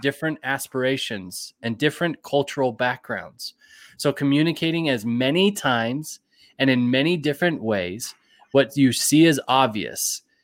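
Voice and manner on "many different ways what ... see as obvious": ordinary talk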